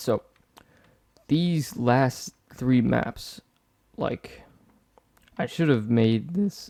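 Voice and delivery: slow voice breaking and cracking partway through. Explaining plans for the lower half of the map, voice cracking. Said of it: "my voice is cracking".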